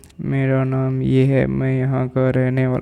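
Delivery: slow, flat, single-tone robotic monotone. Demonstrating how a patient speaks: slow flat robotic monotone. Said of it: "बिल्कुल धीरे धीरे बोलेगा, ऐसे बोलेगा ... रोबोटिक वॉइस ... सिंगल टोन में".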